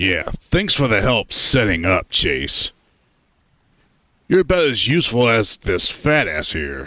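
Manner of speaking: sour, needling, bitter and salty sarcastic tone. Narrating a trip story, the reader voices Flynn rebuffing a fellow traveler, bitter and salty. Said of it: "I've had it with [name]. He's souring the trip with his need to be an asshole. / [name] finally turns around, a beer in his hand as he cracks it open. / His tone is bitter and salty. / his eyes were b".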